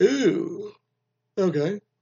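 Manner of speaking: very high ooh spoken through a yawn. Retelling what a woman said loudly in front of people, yawning while speaking. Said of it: "I'm sorry to yawn when I said".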